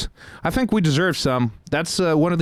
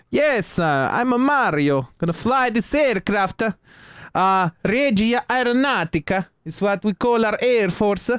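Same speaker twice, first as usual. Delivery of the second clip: put-on Italian accent; 5 semitones higher than usual. Picking italian pilots in a game, the speaker voices his pilot in a put-on italian accent. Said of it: "his accent's right and all".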